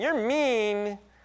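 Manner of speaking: mock ironic, wry, half-joking sarcastic tone. Quoting what she says when he's being mean: imitating sarcastic remark. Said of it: "it's kind of like a sarcastic way of saying".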